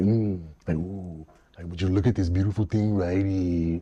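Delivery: calming ASMR voice, low and soft. Showing how he talks in his ASMR eating videos: imitating his low calming ASMR voice. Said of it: "lower my voice down a little bit".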